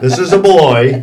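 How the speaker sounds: loud, laughing, amused surprise.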